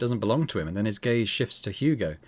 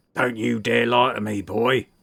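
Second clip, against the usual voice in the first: gruff, scolding, reproving voice. In a story read aloud, a man outside the inn shouts in a deep gruff bellow. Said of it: "A deep, gruff voice bellows".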